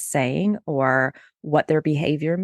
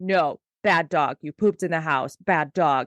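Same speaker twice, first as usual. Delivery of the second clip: harsh, stern scolding voice. Showing that dogs hear tone of voice, the speaker demos scolding a dog. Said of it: "But if I'm like".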